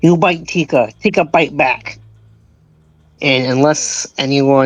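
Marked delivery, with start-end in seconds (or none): 0.0-2.0 fierce cry held back to mild. Voicing a character in a game who screams at another: screaming in character. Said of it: "Tika is going to scream".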